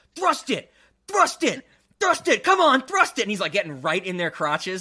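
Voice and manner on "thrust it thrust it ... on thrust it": very high-pitched, loud screaming. Retelling how a skinny red-haired dude screamed at women doing pelvic thrusts, retelling a scream. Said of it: "is just screaming at them".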